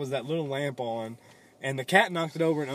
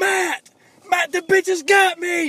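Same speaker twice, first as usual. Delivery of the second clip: mock screaming, higher and louder; 11 dB louder than usual. Retelling a story, quoting a man caught on a blanket's zipper: retelling a scream. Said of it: "he was screaming".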